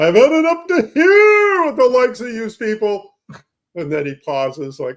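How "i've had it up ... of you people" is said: very loud, very high, shrill, swooping, enraged yell. Retelling a cartoon scene where a man yells at salesmen: imitating a man yelling. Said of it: "is yelling at them, his veins popping in his neck".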